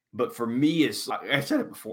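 voice cracking. Sharing a personal take in conversation with others, voice cracking. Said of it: "Oh, voice crack".

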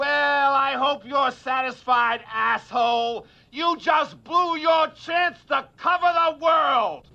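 furious, cutting, heated angry tone. A film character lashing out at another character, angry yelling. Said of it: "he's angry and he, and he's yelling".

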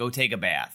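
ordinary talk

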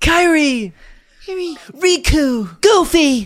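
high, loud shouting voice. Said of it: "He's shouting it in the Haley Joel Osment voice".

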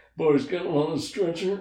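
high, creepy killer voice. Imitating an actor's lines as a sheriff: Buffalo Bill voice. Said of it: "still talks like Buffalo Bill".

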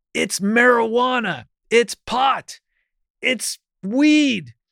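very high, very slow, drawn-out yell. Retelling how a friend's dad yelled to a hard-of-hearing grandmother: imitating someone yelling. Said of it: "And he was yelling".

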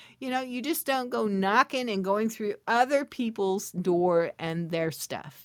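ordinary talk

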